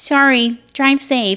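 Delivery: high, dim, dopey dumb-guy voice. Retelling a goodbye called out in a quiet room: imitating Paul's dumb voice. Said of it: "this dumbass voice".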